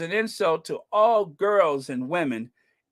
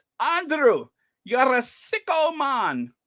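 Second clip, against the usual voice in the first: put-on Scottish accent, rolled r, much higher, slower; 7 semitones higher than usual. Speaker repeats what a man in scotland said to andrew: imitating scottish guy's accent. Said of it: "hard for me to roll those R's".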